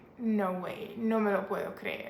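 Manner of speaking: normal talking voice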